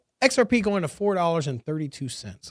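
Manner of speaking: ordinary delivery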